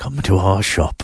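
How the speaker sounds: sleazy announcer-style voice. Asked by the other speaker to do it again, repeating the line in a seedy Mostly Summer voiceover voice. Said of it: "I sound like the guy who does the voiceover".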